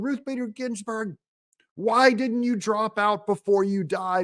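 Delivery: put-on high, small, played-down girl's shriek. Retelling a clip of a girl screaming: imitating a girl screaming.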